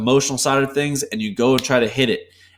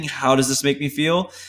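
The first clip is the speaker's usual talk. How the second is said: genuine, open, curious tone rising at the end. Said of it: "accept the system of understanding".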